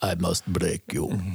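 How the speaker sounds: poorly done low, creaky, rough dramatic voice. Talking about the Rocky films, the speaker does a poor Ivan Drago impersonation. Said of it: "That's my poor impersonation".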